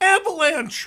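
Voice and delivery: put-on abrupt, very high, loud yell. Telling a joke about men facing a firing squad: imitating a shout. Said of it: "all of a sudden he just shouts".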